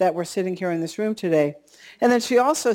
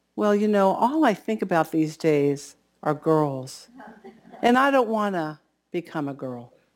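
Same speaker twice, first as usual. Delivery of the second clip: mock-sheepish tone, lower; 2 semitones lower than usual. Retelling a teenage boy's answer to a woman after a service: retelling a sheepish reply. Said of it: "the young teenage boy said sheepishly".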